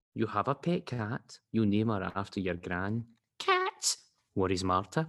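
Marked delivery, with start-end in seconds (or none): 3.4-4.0 very high, piping tiny mouse voice. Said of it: "That was my random mouse voice".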